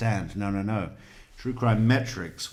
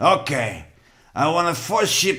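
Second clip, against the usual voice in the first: put-on Cuban accent, higher and louder; 8 semitones higher, 7 dB louder than usual. Trying out a line in a Cuban accent: Tony Montana voice. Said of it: "Why isn't he doing it in a Cuban accent?".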